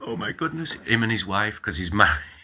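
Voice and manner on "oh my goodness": put-on very high, terrified, frightened cry. Imagining Father Spiridon's reaction to a rant: imitating Father Spiridon, terrified. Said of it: "Father Spiridon's terrified".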